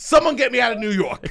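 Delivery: shrill, loud, full-throated shriek. Retelling mice running onto new shoes in New York: retelling a scream. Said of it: "and I screamed".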